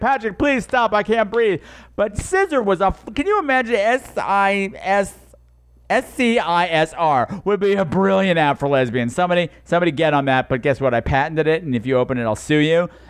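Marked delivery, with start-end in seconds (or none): 0.0-1.6 put-on high pleading voice gasping through uncontrollable laughter. Pretending the audience is rolling on the floor: imitating audience laughing helplessly. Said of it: "rolling on the goddamn floor, holding your side".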